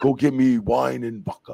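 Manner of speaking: slow, loud, halting broken English. Retelling what a nervous man told him back then, imitating broken English. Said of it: "he spoke broken English".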